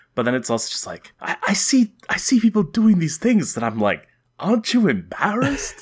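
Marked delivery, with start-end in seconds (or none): 4.4-5.9 high, swooping, wide-swinging stand-up comic delivery. Doing an impression of Sebastian Maniscalco's comedy: Sebastian Maniscalco impression. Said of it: "this is my impression of Sebastian Maniscalco's comedy".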